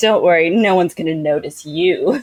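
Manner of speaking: slow, catty, bitchy tone. Imitating a character talking down to a girl: bitchy Yennefer voice. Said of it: "she says it in kind of a bitchy way".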